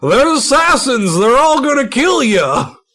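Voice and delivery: shrill yell, pitched very high. Retelling what a character heard from the train: imitating Kingsdale yelling. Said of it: "start yelling".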